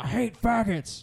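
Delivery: high, loud, bellowing screamed outburst. Retelling a comedy bit where God screams into a party: imitating a loud scream. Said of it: "God screams into a party, ... really loud".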